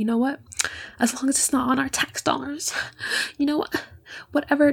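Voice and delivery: huffing, indignant grumble. Retelling what staff members said about the news: imitating someone huffing and puffing. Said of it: "they're huffing and puffing. They're like".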